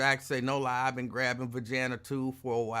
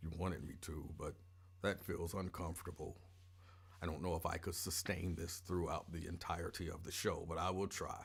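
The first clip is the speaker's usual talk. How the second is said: forced put-on voice in a deeper, dropped-down register; 6 semitones lower, 12 dB quieter than usual. Answering a viewer who asked for another voice: put-on deeper voice. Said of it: "I guess I could try to talk deeper".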